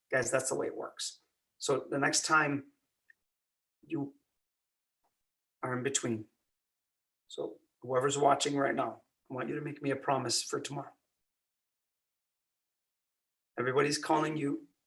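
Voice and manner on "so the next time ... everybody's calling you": lowered, slowed, deliberate speaker's delivery. Speaking to whoever's watching, demonstrating a speakers' technique with a lowered voice. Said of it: "See how I lowered my voice again?".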